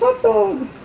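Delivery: high, squeaky cartoon mouse voice.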